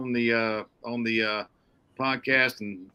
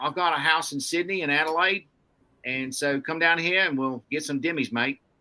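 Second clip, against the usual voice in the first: best-effort put-on Australian accent; 3 semitones higher than usual. Quoting a buddy, in an attempted Australian accent. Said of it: "that's my best attempt at an Aussie accent".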